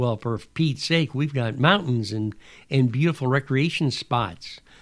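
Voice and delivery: normal talking voice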